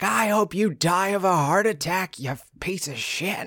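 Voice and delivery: very high, shrill, drawn-out yelling. Retelling a neighbor's argument, imitating a woman yelling. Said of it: "this lady that was yelling at this man".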